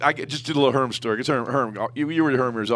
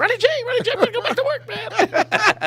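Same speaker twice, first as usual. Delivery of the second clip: squeaky voice, way up high. Retelling a phone call from Herman Edwards in a squeaky Herm Edwards impression. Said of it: "Herm got a little squeaky voice".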